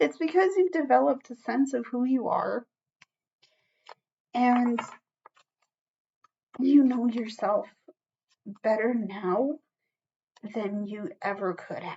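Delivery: on the verge of tears. Speaker telling viewers they now know themselves better, close to crying. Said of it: "I might start crying".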